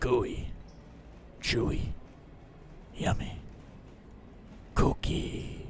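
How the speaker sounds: whispered like a killer. Demanding a cookie from the staff, then a serial-killer Cookie Monster voice. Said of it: "make the Cookie Monster sound like a fucking serial killer".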